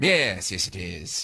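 very slow, spooky, drawn-out vampire drawl. Answering a radio caller who asks if this is [name], Dracula voice. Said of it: "that sounded very Bram Stoker".

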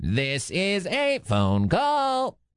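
little mechanical voice. Radio host introduces a phone call segment in a little robot voice. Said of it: "That's me doing a little robot voice".

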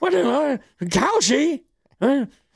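put-on drunk-sounding old voice. Joking about still working here in twenty-eight years: put-on old person voice, sounding drunk. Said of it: "your old person sounds drunk".

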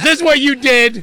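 high, loud, angry yelling.

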